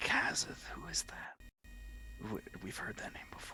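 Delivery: low, barely audible whispered mumble. Speaker voices Soren mumbling to himself, Soren mumbling low to himself. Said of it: "as low as I can".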